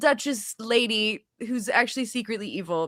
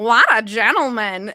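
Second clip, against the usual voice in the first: very loud, belted cartoon mom voice; 10 dB louder than usual. Recalling being asked to redo a line in a recording, in a Lois Lane voice. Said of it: "can you do that like Lois Lane from Family Guy?".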